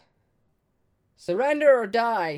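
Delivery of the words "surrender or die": high, loud yell. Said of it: "And I yell out".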